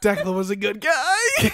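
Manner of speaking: very loud, very slow, booming, drawn-out proclaiming voice. Picturing someone at a joke funeral for an old brand: mock eulogy speaker. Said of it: "someone getting up and being like".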